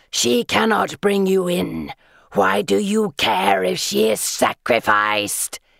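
creaky, rough, screeching creature voice. Narrator reads the creature answering Miss Moore, in a screeching doomed voice. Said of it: "it screeches in that doomed voice".

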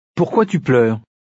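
usual speaking voice

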